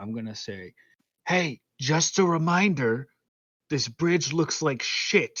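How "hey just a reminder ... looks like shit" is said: loud stage whisper, in character. Voicing a character calling to two others on a bridge: loud whisper. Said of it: "loud whispering".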